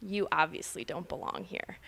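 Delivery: mock flat, whispered deadpan delivery. Retelling shop women snubbing a customer: imitating a deadpan dismissal. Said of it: "it's so deadpan".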